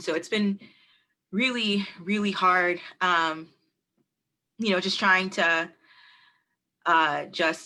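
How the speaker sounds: overcome with emotion, faltering, words trailing off. Speaker talks online about a partner facing prison, emotional. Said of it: "I'm sorry, I'm really emotional".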